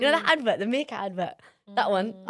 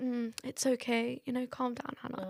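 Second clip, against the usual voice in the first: put-on calm flat monotone, quieter; 10 dB quieter than usual. Describing talking to their kid after medication, the speaker imitates own calm monotone. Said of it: "I'm like monotone".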